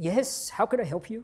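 put-on, high-pitched, pompous English accent. Retelling a phone call to a department store clerk: imitating a pompous English man. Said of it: "he sounded very pompous".

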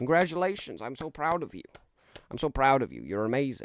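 swooping, animated cartoon voice with swinging pitch. Answering a viewer's request to be congratulated, in the Riggy voice. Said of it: "Do the Riggy voice".

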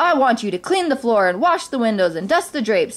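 plain reading voice

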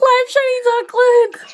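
high, squealing, thrilled disbelief.

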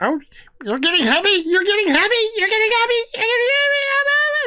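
fast, high voice with pitch climbing steadily. Game master voices Talmud as Fig grows on his shoulders, voice rising higher and higher. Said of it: "his voice gets higher and higher".

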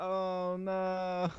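mock deadpan, dejected, flat oh no. Repeating someone's reaction, imitating a depressed 'oh no'. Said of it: "That was like the most like depressed oh no".

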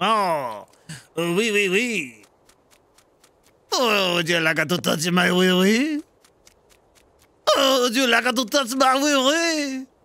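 very slow, fake French-style laughing. Asked to laugh in french during a game round: mock french laugh. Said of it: "laugh in French".

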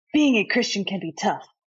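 put-on anime-style character voice. Reading a book's background aloud: put-on anime voice. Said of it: "I got to do it in my anime voice".

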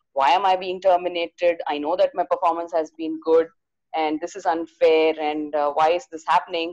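plain

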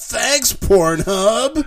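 shrill, very high, over-eager, gushing. Reading aloud a written thank-you with three exclamation marks, very excited. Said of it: "there's three exclamation marks".

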